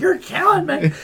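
mock, very high, anguished, pained yell. Retelling yelling at the dentist during painful dental work, retelling a pained yell. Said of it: "you need to stop yelling in my office".

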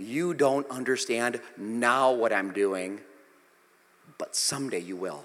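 put-on tender, kindly, gentle, loving tone. Acting out Jesus's reply to Peter: acting out a loving tone. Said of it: "Not in a mean way, in a loving way".

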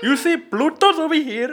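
put-on heavy, laid-on Indian accent, loud and high-pitched. Retelling a stargazing moment, the speaker quotes a man in a heavy Indian accent. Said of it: "he had a heavy-ass Indian accent".

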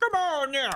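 big-guy voice, pushed way up.

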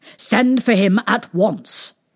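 ordinary delivery

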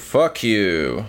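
deliberately bad, terrible put-on New York accent. Saying a mock hostile sign-off: terrible New Yorker "fuck you". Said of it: "a terrible New Yorker "fuck you"".

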